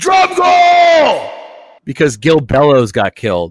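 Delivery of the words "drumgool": very high, loud yelled delivery. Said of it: "He's, like, yelling his name".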